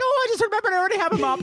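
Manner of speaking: very high-pitched sketch-comedy style voice. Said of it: "it was a Monty Python voice".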